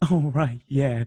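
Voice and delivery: play-acted casual, unbothered tone. Retelling a clown's reply when asked to get the door: imitating a nonchalant reply. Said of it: "so nonchalant about it".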